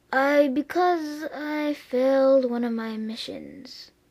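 mournful, sad, sorrowful knight voice. Answering why the knight looks sad, sad. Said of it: "why do you look so sad".

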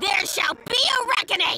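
angry tiny prospector voice. Responding to someone's tomfoolery, angry like a teeny tiny prospector. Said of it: "you kind of sound like a teeny tiny prospector".

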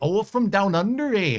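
poorly done, vaguely Norwegian accent. A weather host answers viewers from Australia, bad Norwegian-ish accent. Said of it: "That's a very bad Norwegian-ish accent".

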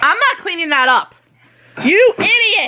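high, angry, fatherly scolding tone. Scolding someone for a mess: scolding like a dad. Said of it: "Now I sound like your dad saying idiot".

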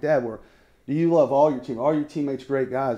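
ordinary delivery

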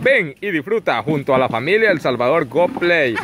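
commercial announcer voice. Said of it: "hasta un comercial les había hecho yo".

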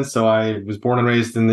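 ordinary talk, nothing marked

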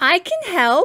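eager, hopeful, called out. A little bulldozer offers to join the other trucks, exclaimed. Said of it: "he exclaimed".

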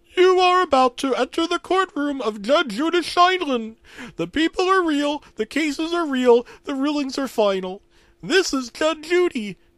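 very high, loud frog voice. Narrator reads the Judge Judy intro announcement, Kermit the Frog voice. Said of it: "It was Kermit the Frog".

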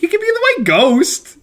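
very high, fast, squeaky mock sympathetic coo. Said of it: "and I was like".

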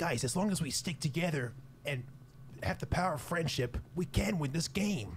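put-on anime character voice. After asking the others to talk like anime characters, anime character voice. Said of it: "Talk like an anime character with me".

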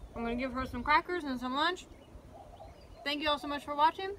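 speaking with a mouthful of food. Eating on camera and signing off to viewers, talking with mouth full. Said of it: "I'm sorry I'm talking in my mouthful".

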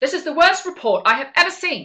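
harsh, impatient, very loud. Showing an example of unpleasant feedback: impatient, angry. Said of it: "let me do it with a proper voice".

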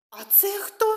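high, astonished, surprised little voice. Reading a fairy tale, a character asks the ant queen a question, surprised. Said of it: "здивовано запитала Люмі".

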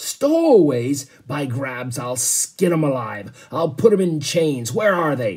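raging, furious, booming roar. A ship's captain hears of stowaways and explodes, roaring in fury. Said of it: "he roared".

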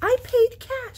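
smug, self-satisfied, very high-pitched and loud. Asked where his receipt is, he answers smugly. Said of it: "said James smugly".

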